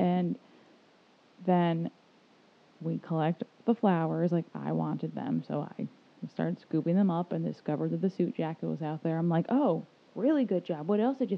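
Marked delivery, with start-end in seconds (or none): 9.5-11.3 imitated sarcastic tone. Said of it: "my tone, though, was calling him an idiot".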